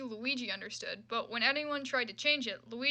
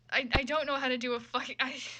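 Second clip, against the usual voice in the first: plain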